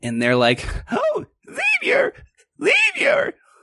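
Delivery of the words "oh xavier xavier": really annoying put-on mantis voice, pitched higher. Voicing praying mantises greeting the party in amazement: really annoying mantis voice. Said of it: "The really annoying one?".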